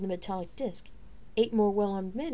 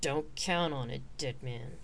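very low, soft growl; 7 semitones lower, 5 dB quieter than usual. Narrator reading the warrior's reply to a sneering taunt, growling. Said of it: "The warrior growled".

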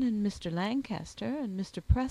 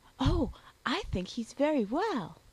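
cheerful, bright, breezy delivery; 4 semitones higher than usual. Emily replies to Mama's question, gaily. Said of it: "replied Emily gaily".

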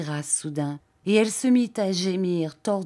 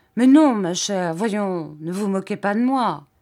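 slightly irritable, bad-tempered, raised voice; 5 dB louder than usual. Narrator reading his reply to her murmured question, slightly bad-tempered. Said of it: "avec une nuance de mauvaise humeur".

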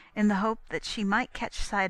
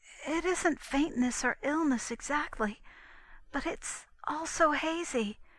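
high, breathless, out-of-breath stammering words; 6 semitones higher, 3 dB quieter than usual. A girl hurries up to a woman in the street, stammering breathlessly. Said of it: "stammered the girl breathlessly".

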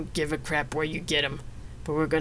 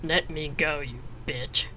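threatening growling voice. A ruffian, held in an iron grip, growls at Xena. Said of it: "he growled".

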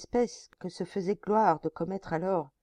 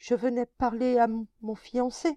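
faltering stammer, higher pitch; 5 semitones higher, 4 dB louder than usual. Narrator reads a terrified young woman answering the chief, stammering with difficulty. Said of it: "elle balbutia avec peine".

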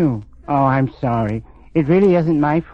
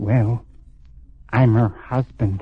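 whispered, lower pitch; 5 semitones lower than usual. Asked about being related to Helen Estabrook, replying in a whisper. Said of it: "Why are you whispering?".

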